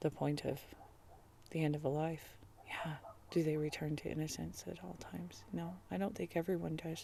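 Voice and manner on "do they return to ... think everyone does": soft, whispered muttering. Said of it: "I'm muttering".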